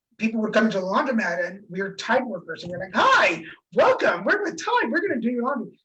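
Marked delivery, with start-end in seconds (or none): 3.0-5.7 bright, chipper, sing-song voice. Retelling greeting people at the laundromat as Tide workers, mock chipper greeting. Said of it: "we're all chipper".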